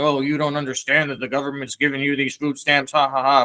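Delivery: mock elitist, condescending tone. Imitating an elitist-sounding city guy lecturing voters: mock elitist, condescending tone. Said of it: "doesn't sound elitist, that doesn't sound like some guy from New York Ci-, City saying".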